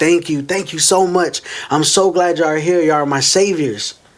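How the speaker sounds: tearful, crying, thankful voice. Retelling a man on his knees before police: imitating someone crying with thanks. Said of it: "he just starts thanking and crying".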